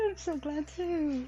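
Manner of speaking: high, very slow, drawn-out voice choking back tears. Retelling what a woman said when hugged at christmas, imitating holding back tears. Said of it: "She's like trying not to cry".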